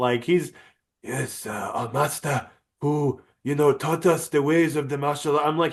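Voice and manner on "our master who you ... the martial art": put-on, fake Chinese accent. Quoting a man who keeps slipping into a chinese accent. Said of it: "he's doing a Chinese accent".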